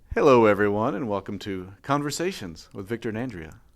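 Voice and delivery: radio-style announcer voice. Opening episode three of a podcast, podcast host voice. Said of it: "you've already developed a podcast voice".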